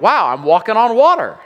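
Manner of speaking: thrilled delighted outburst. Retelling Peter walking on water toward Jesus, Peter, mock-excited. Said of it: "he's pretty excited".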